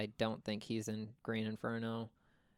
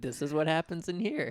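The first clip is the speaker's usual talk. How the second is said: raised, high, loud host-like announcing voice; 6 semitones higher, 7 dB louder than usual. Imagining a director touring a movie house, imitating Zach Cregger. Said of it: "and just being like".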